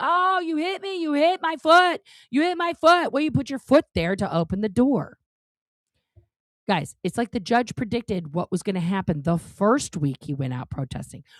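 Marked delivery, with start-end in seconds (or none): 0.0-3.1 put-on high-pitched yelling and screaming. Retelling a protester yelling when his foot is caught in a door: imitating Smith-Levin yelling and screaming. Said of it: "he's yelling and screaming".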